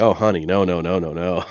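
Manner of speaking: put-on embarrassed woman's voice. Retelling the wife's reaction to a bad flyer: imitating embarrassed wife. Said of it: "I think she was embarrassed".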